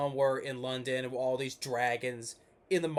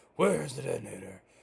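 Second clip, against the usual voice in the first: dumb-sounding, gruff, rough, raspy disguised voice. Complaining about the voice Batman uses in the Dark Knight films: Batman's dumb disguised voice. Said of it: "the dumb voice, you know, disguising his voice".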